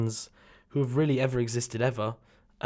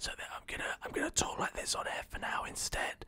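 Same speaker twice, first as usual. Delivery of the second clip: very quiet, breathy whisper right into the mic. On air after coming up too high on the dials, whispering to listeners. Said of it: "maybe now I'll whisper to you".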